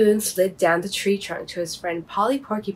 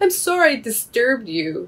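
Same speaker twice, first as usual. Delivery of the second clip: sniffling, higher and slower; 3 semitones higher than usual. Bobby Baboon answers Old Owl, who called down from above, sniffling. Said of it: "sniffled Bobby".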